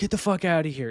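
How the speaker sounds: mock confrontational scolding. Retelling a confrontation with a woman, acting out going at her. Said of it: "I'm still going at her".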